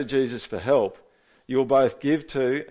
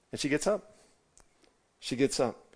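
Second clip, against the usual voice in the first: ordinary talk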